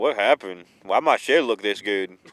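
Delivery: put-on old grandfather voice, deep. Picturing his grandpa coming out to look at the shed, imitating his grandpa. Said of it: "look at it and be like".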